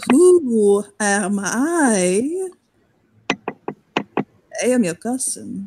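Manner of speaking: put-on slow, drawn-out Russian accent. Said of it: "He'll say in a Russian accent".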